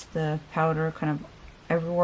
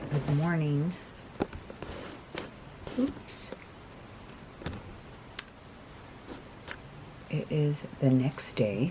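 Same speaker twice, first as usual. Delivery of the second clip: very quiet whisper, under the breath; 10 dB quieter than usual. Vlogger greeting viewers at four thirty in the morning, whispering. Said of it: "I have to whisper".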